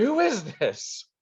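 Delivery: shouted, demanding tone. Narrating a character who marches up to the players, shouting. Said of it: "he'll start shouting".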